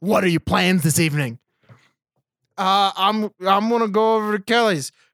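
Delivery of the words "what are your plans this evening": put-on, super aggressive tone, faster pace. Describing an actor's line in a show, imitating his super aggressive delivery. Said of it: "Like super aggressive".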